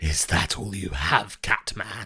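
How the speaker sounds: hissing, sibilant voice. A game master voicing a creature hissing back at a player: hissing. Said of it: "He hisses back at you".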